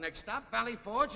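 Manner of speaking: high, yelled, called-out announcer-style call. Explaining how a shouting passenger was made to leave the bus, retelling a yelled announcement. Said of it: "I yelled out".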